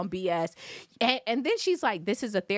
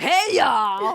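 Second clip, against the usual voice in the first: mock tipsy, loud, obnoxious drunken voice; 3 semitones higher, 6 dB louder than usual. Retelling how a late group member joined the session: imitating a drunk person. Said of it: "clearly intoxicated".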